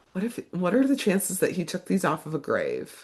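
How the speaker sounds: unserious, hushed, half-whispered stage whisper. Retelling what a woman said when handing over flowers, imitating her half-whisper. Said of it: "And she like whispers it".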